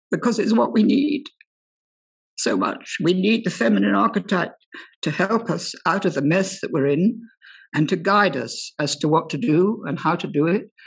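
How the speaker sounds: tearful, crying while still talking. Speaking to two authors about the Grail story, crying while talking. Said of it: "I'm even crying now".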